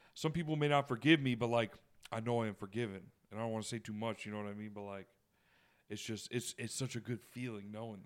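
ordinary delivery

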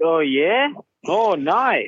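very slow, deliberate, each word drawn out. Imitating how a fellow driver would react to being teased: Will Power impersonation. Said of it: "you did a pretty good Will Power impersonation".

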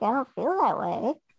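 ordinary delivery

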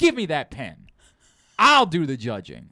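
furious, livid, animated delivery. Retelling a wife taking over the judging: imitating a livid wife. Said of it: "she was livid".

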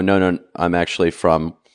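ordinary delivery

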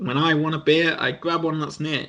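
ordinary talk

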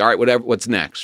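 plain

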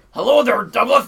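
booming, high-pitched cartoon voice, called out. Describing the cartoon neighbor Mister Dink, imitating Mister Dink. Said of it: "Who was like".

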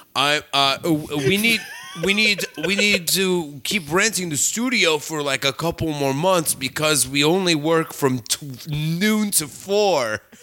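thick put-on Danish accent.

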